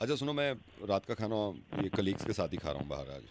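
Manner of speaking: hushed, low, soft murmur.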